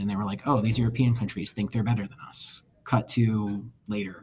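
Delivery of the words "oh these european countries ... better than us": plain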